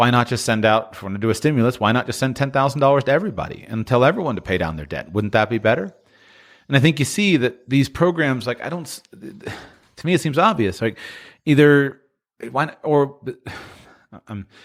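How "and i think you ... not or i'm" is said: halting, stammering, restarting, cutting itself off. Speaking while trying not to go too deep into politics, stammering. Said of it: "I'm stammering".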